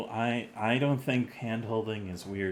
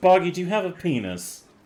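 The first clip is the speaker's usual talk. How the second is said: exasperated, frustrated, very loud, high-pitched voice; 9 semitones higher, 8 dB louder than usual. A game narrator voices a woman questioning Boggy, a little frustrated. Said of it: "gets a little frustrated".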